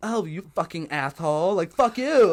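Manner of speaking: exaggerated, drawn-out put-on camp voice. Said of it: "and like I'm doing the voice".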